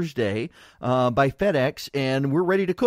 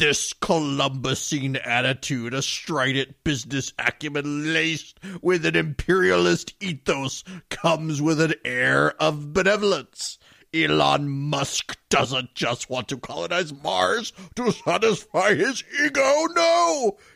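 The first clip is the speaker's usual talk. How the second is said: mock angry put-on voice. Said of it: "I have to do my feminist voice".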